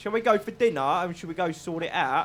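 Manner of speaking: bad put-on London accent. Retelling how others suggested dinner during arguments, in a really bad london accent. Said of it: "That was my really bad London accent".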